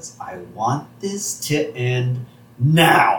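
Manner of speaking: slow, unhurried, deliberate, drawn-out delivery. Retelling a cartoon scene, quoting a character's line: slowly. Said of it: "Marge just slowly says".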